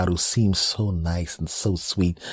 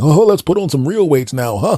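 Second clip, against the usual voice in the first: put-on loud remark, much higher pitch; 9 semitones higher, 8 dB louder than usual. Retelling a guy at the gym mocking the speaker, retelling a loud remark. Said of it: "by very loudly saying".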